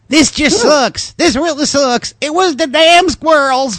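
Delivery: put-on Southern accent, pitched very high. Reading a news story and quoting the homeowner, Southern voice as Smith. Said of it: "I do a pretty good Southern voice".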